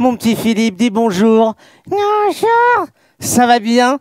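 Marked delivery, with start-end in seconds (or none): 1.9-2.9 squeaky, tiny, very high little puppet voice. Giving a small voice to the one facing the camera, small put-on voice. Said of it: "je vais te donner une petite voix".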